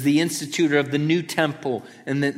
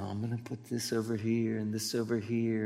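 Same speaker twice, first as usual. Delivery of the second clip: calm, soothing, very hushed voice; 4 semitones lower, 11 dB quieter than usual. Comparing the Gospel authors to painting: calm soothing Bob Ross voice. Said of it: "he has that calm, soothing voice".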